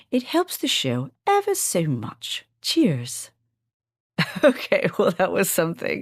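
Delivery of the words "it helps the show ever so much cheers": dodgy sing-song swooping put-on British accent. Asking listeners to tap the subscribe button in a put-on British accent. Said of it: "my questionable British accent".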